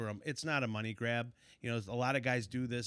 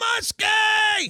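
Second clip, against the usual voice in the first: piercing, very high, very loud scream; 15 dB louder than usual. Retelling a fellow angler screaming after hooking a big fish, retelling a scream. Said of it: "And he's screaming again".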